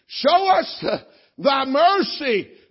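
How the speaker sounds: desperate, loud, high, slow pleading wail.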